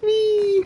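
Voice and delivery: mock excited cheer, very high and squeaky.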